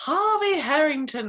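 long, drawn-out put-on British accent, swooping. Saying this week's guest's name: long, drawn-out British accent. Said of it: "say in a long, drawn-out British accent".

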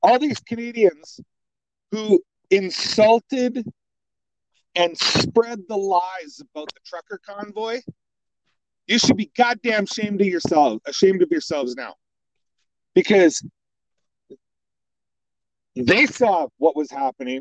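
heated angry scolding. Ranting about canadians who insulted the trucker convoy: getting mad. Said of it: "I'm sorry, I'm getting mad now".

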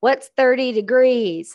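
put-on American accent with Southern flavour. Imitating how all Americans sound to the speaker, imitated American accent. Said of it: "And I say it like you, because all Americans sound like that to me. You all have a Southern accent".

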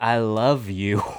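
very soft, gentle, hushed, soothing, calming voice. Retelling a film character's first line to the others, imitating a very soft, soothing voice. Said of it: "very soft, soothing voice".

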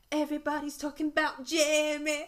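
clumsy put-on northern English accent, high and slow. Describing something enjoyed with uni friends, in an attempted northern accent. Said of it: "I'm trying to do a northern accent".

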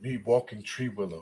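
very deep, hushed, low broken-English voice.

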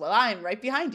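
normal talking voice

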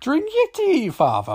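very high-pitched attempted Irish accent. Describing a scene, the speaker quotes a character from Father Ted: Father Ted accent attempt. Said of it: "I can't do the accent".

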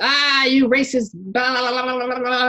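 high, slow, mock yelling rant. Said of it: "I could have went off the mouth".

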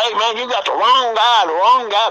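very high, shrill scream. Retelling an arrest where the man kept protesting: imitating someone screaming. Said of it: "he's screaming the whole time".

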